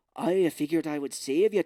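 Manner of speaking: loud, belted-out, badly done Irish accent. Mocking Charlie Hunnam as Kai in a movie: terrible Irish accent. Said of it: "he's got a terrible Irish accent in this movie. He's like".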